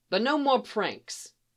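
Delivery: plain reading voice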